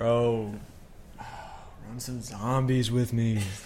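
pestering, nagging voice. Acting out what a friend says each time he comes in, imitating a friend. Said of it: "That's my impression of you".

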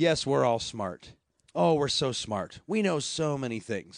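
tongue-in-cheek, sarcastic, mocking tone. Answering the others in a group discussion: sarcastic. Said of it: "sounds like you're being sarcastic".

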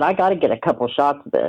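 ordinary talk

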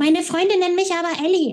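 shrill, high-pitched voice. The narrator parrots a girl's words back at her in a shrill mockery of Elisabeth. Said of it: "äffte ich sie in schriller Tonlage nach".

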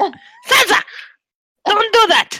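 shrill, very high scolding yell. Told the scolding sounded too sweet, the speaker demonstrates yelling at the cat. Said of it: "You'd rather I yell?".

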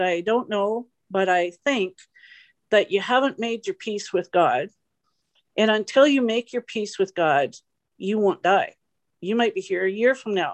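ordinary delivery

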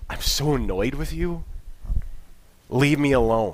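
irritated, fed-up, annoyed and frustrated tone. Showing how someone might sound when asking out of frustration: frustrated tone. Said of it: "It could be frustration".

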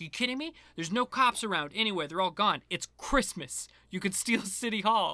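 put-on heavy, thick New York street-kid accent. Quoting a kid's line from a scene with John: thick New York accent. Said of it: "I love the thick New York accent".

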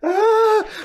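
high, loud, pained cry of agony. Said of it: "And he goes".

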